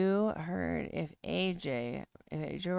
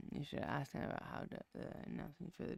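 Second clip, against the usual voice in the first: mumbled, indistinct muttering, hard to hear; 3 semitones lower, 11 dB quieter than usual. Speaker suggests the listener ask someone about an announcement: mumbling. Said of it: "You're mumbling".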